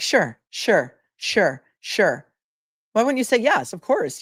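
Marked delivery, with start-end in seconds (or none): 0.0-2.2 mock, very slow, patronizing, condescending, drawn-out "sure". Complaining about someone's repeated answer, imitating a condescending 'sure'. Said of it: "the sure is so con- condescending too. It's like".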